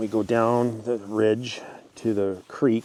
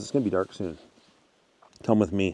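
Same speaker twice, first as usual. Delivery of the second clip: normal talking voice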